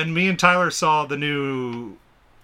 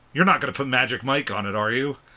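ordinary delivery

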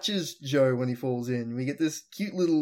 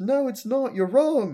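very high, shrill, loud yell; 11 semitones higher, 6 dB louder than usual. Recapping a scene from a show, the speaker acts out a character retelling a yell. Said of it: "starts yelling at him".

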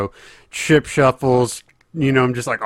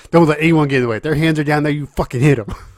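mock trash talk, higher; 4 semitones higher than usual. Retelling how craps dealers talk to players, imitating dealers talking trash. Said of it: "They're all, like, talking mess and shit".

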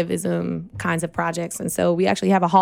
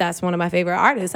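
normal talking voice

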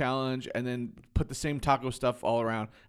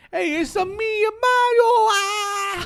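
put-on Italian accent voice, higher and louder; 10 dB louder than usual. Mocking how the character talks in the movie: Mario voice. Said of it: "you tell me he's like".

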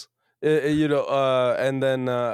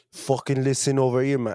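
put-on South London accent gradually slipping away. Trading accent bits with another speaker, fading put-on South London accent. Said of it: "I used to have a great one, and I'm losing it".

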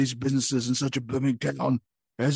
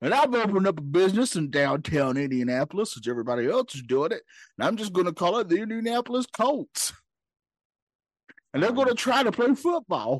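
put-on old prospector voice, higher, faster; 5 semitones higher than usual. Doing a comedic character bit, in an Old Prospector voice. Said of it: "it's me, Old Prospector".

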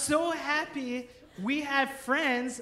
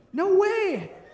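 high, loud, shocked, stunned disbelief. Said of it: "I'm like".

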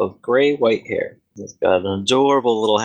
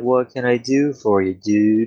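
mellow, easy-going, laid-back aging hippie voice; 2 semitones higher than usual.

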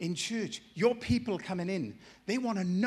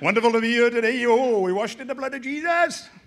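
booming, very loud, put-on Welsh preacher accent; 2 semitones higher, 10 dB louder than usual. Mimicking somebody speaking at the front to a gathering, in a put-on welsh accent. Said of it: "There's something traditional about a Welsh accent in me".

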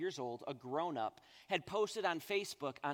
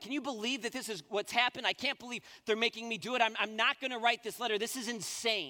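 high, loud, furious, fuming rant; 6 semitones higher, 5 dB louder than usual. Retelling a call to dad after a meeting: retelling a livid rant. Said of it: "I was livid".

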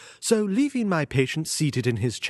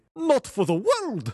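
horrified exclamation; 7 semitones higher than usual. A son, invited to remain during his father's consultation, replies crying out in horror. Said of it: "he cried with a gesture of horror".

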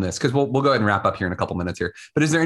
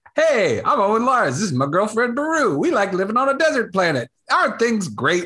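very high, sunny, cheerful youthful chirp; 11 semitones higher than usual. Recalling how Owen first spoke in episode two: young, cheerful Owen Lars voice.

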